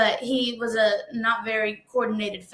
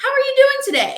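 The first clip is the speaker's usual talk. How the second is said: very high, loud chit-chatty friendly tone. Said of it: "my friend is a very, like, chit-chatty".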